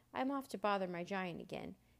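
ordinary delivery

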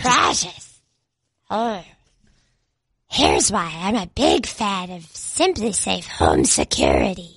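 creature voice with swooping, swinging pitch. A host does the second ad read as Gollum, in Gollum voice. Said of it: "I'm going to do this one as Gollum".

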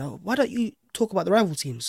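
normal talking voice

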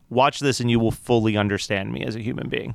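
ordinary delivery

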